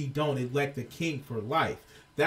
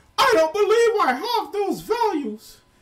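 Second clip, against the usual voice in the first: very high, loud, whiny cartoon frog voice. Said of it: "he sounds like a whiny ass Kermit the Frog".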